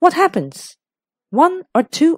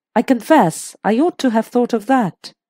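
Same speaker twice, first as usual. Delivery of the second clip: ordinary delivery, nothing marked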